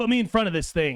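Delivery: shouting over wind. Voicing a character shouting over whipping wind through the comms: shouting. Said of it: "he shouts out to you".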